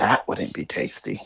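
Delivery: very soft muttered whisper under the breath. A player in a tabletop game speaking as his character, whispering under his breath. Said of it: "kind of whisper under his breath".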